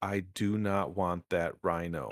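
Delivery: spelled out very, very slowly, low and deliberate. Saying it for the kids in the back, very, very slow. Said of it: "I'm going to say this very, very slow".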